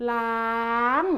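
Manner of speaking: ล้าง carried up to a high tone. Teaching the word for sink, ล้าง on high tone, rising from la. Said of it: "ล้าง is a high tone. Start from la. Gradually make it up".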